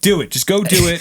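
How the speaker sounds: shouting. Urging podcast listeners to run for office, yelling. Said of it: "You're yelling at us".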